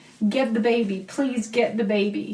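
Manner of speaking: mock tearful, crying pleading voice. Retelling what a crying store manager kept saying: imitating someone crying. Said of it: "she just kept saying over and over again while she was crying".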